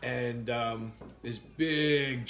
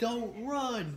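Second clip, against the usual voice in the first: play-acted, very high, shrill shouted yell; 11 semitones higher than usual. Retelling how the dog's owner shouted as the speaker ran, retelling a yell. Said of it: "She starts yelling at me".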